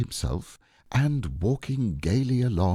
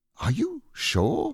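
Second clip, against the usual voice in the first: greatly astonished, even more surprised, higher pitch; 12 semitones higher than usual. Reading a story aloud, Rabbit questioning Pooh Bear: even more surprised. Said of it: "still more surprised".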